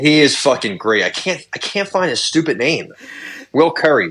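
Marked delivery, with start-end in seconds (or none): none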